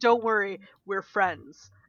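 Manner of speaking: fake reassuring tone. Mimicking another speaker's reassurance: imitating a friend's mock reassurance. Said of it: "you said that in such a way where it's like".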